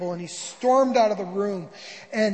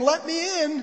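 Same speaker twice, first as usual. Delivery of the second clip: put-on, demanding yell; 7 semitones higher than usual. Telling the story of the Queen pounding on Albert's door: retelling a yell.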